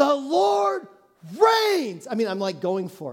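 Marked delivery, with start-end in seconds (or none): 0.0-2.1 play-acted, high, full-on shout. Retelling reading verses aloud during a storm: retelling shouting a verse. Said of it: "literally shouting each line".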